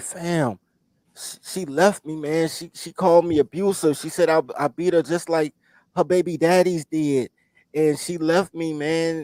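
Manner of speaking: high, tearful, broken-up crying voice. Retelling a friend's words on the corner: imitating a friend crying. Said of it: "and he was crying".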